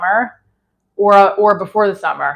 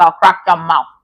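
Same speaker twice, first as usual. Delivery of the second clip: put-on grandma voice; 3 semitones lower, 3 dB louder than usual. Retelling what his grandmother used to say: imitating his grandmother. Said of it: "She's like".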